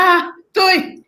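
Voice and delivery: mock outraged protest. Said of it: "I'm like".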